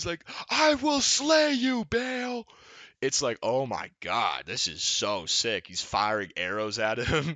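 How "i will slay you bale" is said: slow, very high, drawn-out heroic battle yell. Speaker retells a game character shouting during the fight with Bale; imitating a game character yelling. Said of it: "he's fucking yelling at him".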